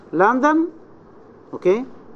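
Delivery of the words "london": questioning climb in pitch on "London". Showing the listener needs more information: high rise on london. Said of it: "It is to rise".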